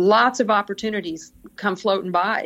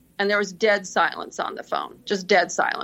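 plain

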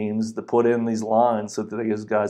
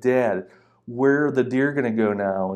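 put-on indignant, mad, accusing, upset child's voice. Retelling what a young daughter said to her dad: imitating an angry daughter. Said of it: "she got so mad at me".

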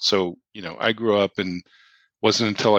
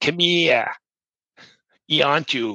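put-on Massachusetts accent, slow and high; 6 semitones higher than usual. Retelling what a strange thing said, imitating a Massachusetts accent. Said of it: "imitating a Massachusetts accent".

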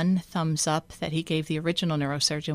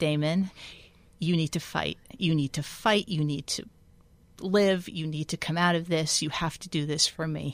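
firm, stern, angry, commanding put-on tone. Retelling words spoken into damon's ear in hospital: retelling stern, angry words. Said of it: "I was stern and angry".

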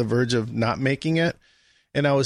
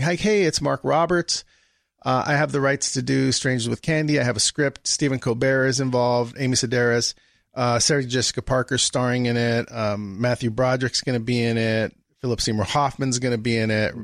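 ordinary talk

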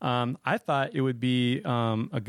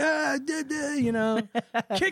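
mock panicked yelling, higher. Retelling a firework landing by someone's toes: imitating own panicked yelling. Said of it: "I don't even know what to yell to him".

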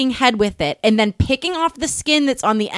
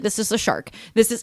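put-on rushed tone, quieter; 2 semitones lower, 4 dB quieter than usual. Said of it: "she's trying to get through".

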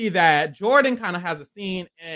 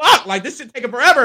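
acted panicked voice, higher and louder; 6 semitones higher, 7 dB louder than usual. Retelling how a contestant reacted while digging: imitating Jordan panicking. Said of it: "panicking a little bit".

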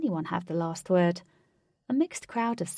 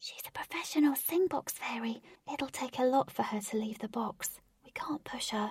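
hushed, high-pitched, soft whisper; 5 semitones higher, 6 dB quieter than usual. Reading a story where one character whispers into another's ear: whispering.

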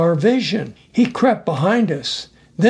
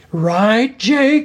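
insistent, pressing, demanding tone, pitched up; 5 semitones higher than usual. Red asks Jake a second time, demanding an answer. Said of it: "This time Red demanded an answer".

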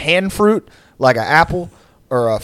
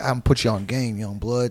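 put-on wise old man voice, lower and quieter; 4 semitones lower, 8 dB quieter than usual. Acting out advice from a stranger at a bus stop: old wise bus stop guy voice. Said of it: "old, wise, like, bus stop".

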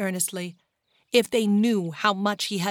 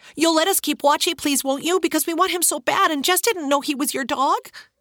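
breathless, high, rushed, pleading, all in one breath; 8 semitones higher, 3 dB louder than usual. Reading a story, a small boy begs to keep his dog: all in one breath. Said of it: "saying in one breath".

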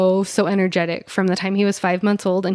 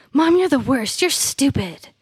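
put-on high, yelled little kid outburst; 6 semitones higher than usual. Retelling what a loud child yells in church: imitating a child yelling. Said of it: "he'll yell out".

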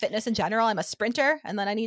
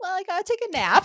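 put-on childlike voice pitched high like a little kid; 9 semitones higher than usual. Retelling own words about needing a nap: childlike voice. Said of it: "I sound like a child".

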